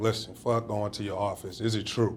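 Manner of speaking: ordinary talk, nothing marked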